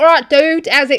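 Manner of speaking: put-on very loud, high inner-city London accent. Retell how a young English guy spoke in something you turned on, imitating an inner-city London accent. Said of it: "he spoke like real inner city London".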